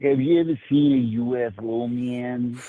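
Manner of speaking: very slow, unhurried, drawn-out delivery. Asking another speaker about UFOs: Ray from Tucson impression. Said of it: "a pretty good, uh, Ray from Tucson impression".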